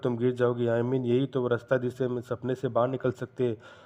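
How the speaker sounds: plain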